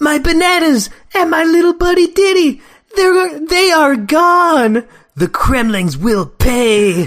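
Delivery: high, slow cartoon-hero voice, "pay" stretched out. Reading Donkey Kong's line from the cartoon: Donkey Kong cartoon voice. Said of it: "I was so in Donkey Kong cartoon mode".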